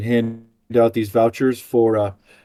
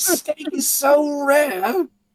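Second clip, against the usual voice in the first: angry TV chef yelling, pitched much higher. In a group comedy bit, speaker plays a shouting TV chef: Gordon Ramsay impression. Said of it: "Gordon Ramsay the fourth".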